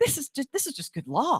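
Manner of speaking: giddy, pitched-way-up excitement and delight. Retelling how a judge read the case: imitating a giddy judge. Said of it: "giddy reading it".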